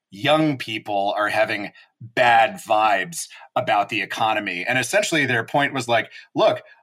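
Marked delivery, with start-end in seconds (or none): 0.2-4.7 slow, mocking, sarcastic scare-quote delivery. Quoting an infuriating claim about young people, in sarcastic air-quote tone. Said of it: "I hope people can hear the air quotes in my voice when I do this".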